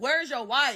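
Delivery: heated, loud, high-pitched yelling. Recounting confronting a man who stalked you, retelling a yell. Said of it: "Now I'm yelling like".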